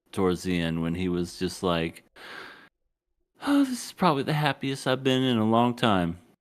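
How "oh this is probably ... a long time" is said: put-on emotional, raised, swooping, choked-up gush. Retelling a moment at the end: imitating Hiro choked up. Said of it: "Got himself a little emotional and choked up".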